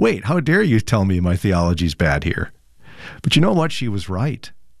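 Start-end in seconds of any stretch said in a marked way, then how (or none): 0.0-2.5 stunned, shocked, caught-off-guard, taken-aback tone. Retelling own reply to a mentor's criticism: imitating own shocked reaction. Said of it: "I looked at her in shock".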